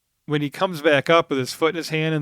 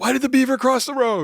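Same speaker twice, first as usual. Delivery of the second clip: high-pitched yell. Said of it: "he yells".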